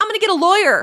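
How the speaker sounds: put-on shrill, very high, very loud child yell. Imitating an eleven-year-old girl yelling at the cops: imitating a girl yelling at cops. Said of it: "yelling at the cops".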